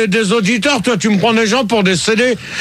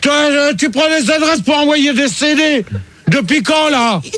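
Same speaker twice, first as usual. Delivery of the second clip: high-pitched, furious, angry shouting outburst. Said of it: "Calme-toi, [name]".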